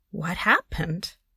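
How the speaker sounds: incredulous, disbelieving tone. Hearing a child's report from school, a woman asks, incredulous. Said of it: "I asked incredulously".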